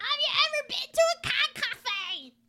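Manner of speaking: high, slow, squeaky goblin voice.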